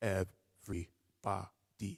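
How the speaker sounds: even syllables on the beat. Speaker demonstrates rhythm to a snapped tempo, even quarter-note syllables. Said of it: "quarter note rhythm".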